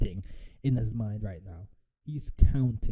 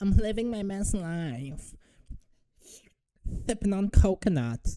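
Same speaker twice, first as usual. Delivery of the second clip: very high, slow drawl, dragging out "life"; 9 semitones higher than usual. Imitating a fighter relaxing in Thailand: Mike Tyson voice. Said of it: "I don't know why I'm doing a Mike Tyson impression".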